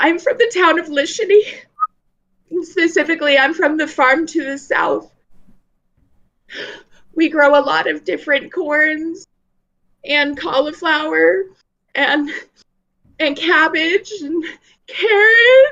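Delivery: very high-pitched, tearful little crying voice. Game master voicing a character introducing herself to the party, crying a little. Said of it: "she starts crying just a little bit".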